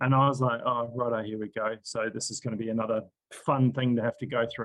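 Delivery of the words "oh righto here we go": put-on dry, heavy, sarcastic throwaway delivery. Retelling own past reaction to a warning about symptoms: retelling own sarcastic remark. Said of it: "there's a lot of sarcasm there".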